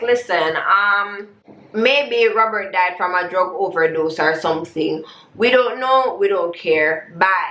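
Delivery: ordinary talk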